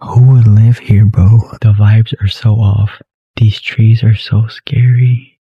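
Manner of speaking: speaking in a whisper. Exploring a dark estate at night with neighbors nearby: whispering. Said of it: "I'm whispering because there's neighbors here".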